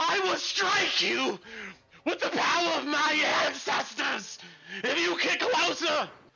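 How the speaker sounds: screaming in character voice. Voicing a character threatening someone who comes closer: screaming in character. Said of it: "he screams".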